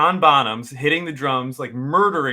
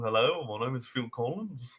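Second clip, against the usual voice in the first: put-on Liverpool accent; 11 dB quieter than usual. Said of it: "more of a Liverpoolian accent".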